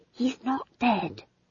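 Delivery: soft, hushed half-whisper. McGrath, clinging to her colleague's arms as she gets up: half-whispered. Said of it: "she whispered".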